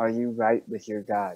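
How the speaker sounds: whispered voice. A player's character takes the paladin aside to speak; whispering. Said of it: "And I'm going to whisper to him".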